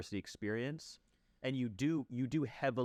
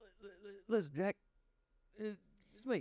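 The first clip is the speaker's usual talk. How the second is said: put-on manic old man voice, pitched higher; 10 semitones higher than usual. Doing a Joe Biden impression: manic Biden voice. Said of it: "That's when he's, like, manic".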